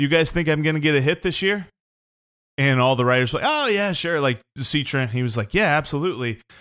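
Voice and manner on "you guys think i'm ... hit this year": light, play-acted, jokey tone. Retelling what a player asked writers at the end of a Zoom interview, retelling a joking question. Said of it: "he jokingly said".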